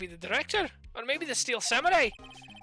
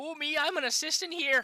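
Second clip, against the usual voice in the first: rough attempt at a put-on Canadian accent; 4 semitones higher than usual. Letting viewers pick voices, playing the assistant with an attempted Canadian accent. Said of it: "Canadian accent?".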